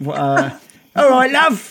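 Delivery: put-on Birmingham accent. Speaker imitates a woman said to be from Birmingham, attempted Birmingham accent. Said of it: "Is that Birmingham?".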